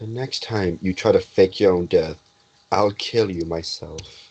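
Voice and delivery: menacing, quiet stage whisper. Voicing a grandfather who hugs a player character back: half-whispering a threat. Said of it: "he whispers in your ear".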